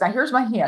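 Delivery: high, put-on courteous, very polite delivery. Imitating how a co-host gestures during filming: imitating someone speaking politely. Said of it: "she does it very politely".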